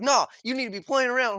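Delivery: very high-pitched shout, yelling. Retelling what Hunter yelled during an argument: imitating Hunter yelling. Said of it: "Hunter was yelling at me like".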